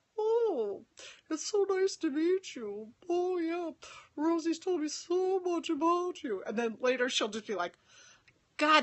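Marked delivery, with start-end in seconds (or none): 0.2-6.4 high, slow put-on voice with polite formal manners. Imitating a woman greeting the speaker's friends, channeling Mrs Bouquet. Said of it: "channeling Missus Bouquet".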